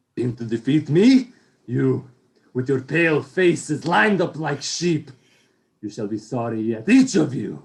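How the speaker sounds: menacing, snarling vampire voice. Reading the scene, Dracula faces the others closing in on him: Dracula's menacing snarl. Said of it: "He snarls menacingly".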